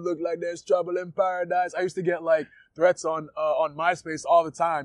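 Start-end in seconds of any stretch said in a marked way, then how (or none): 0.0-1.7 terrible put-on Jamaican accent. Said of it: "my Jamaican accent is terrible".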